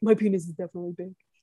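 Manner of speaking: muttered, mumbled, half to oneself. Quoting how he would repeat the phrase, imitating a mutter. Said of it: "he would just like mutter it".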